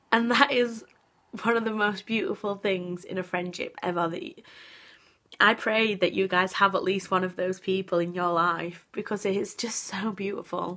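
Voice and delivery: moved, earnest, heartfelt, emotional delivery. A speaker tells viewers about a close friend, getting emotional. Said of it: "I don't know why I'm getting so emotional here".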